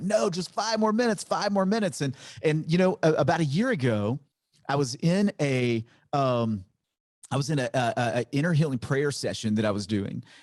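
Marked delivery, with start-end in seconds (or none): 0.0-2.0 put-on very high, screamed child's voice, protesting tone. Retelling being driven away as a child: imitating a childhood scream.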